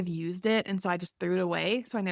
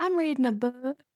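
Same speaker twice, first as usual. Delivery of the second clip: put-on really thick country accent, high-pitched tiny child voice; 6 semitones higher than usual. Imagining Riley as a little kid saying this, Riley in thick country accent. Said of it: "this really country accent saying".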